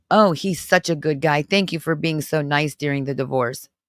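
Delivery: normal talking voice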